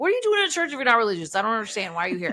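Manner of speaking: annoyed, exasperated, high swooping voice. Retelling a film scene where a priest questions a man with a gun at his back: imitating an annoyed priest. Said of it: "he's so annoyed at the situation".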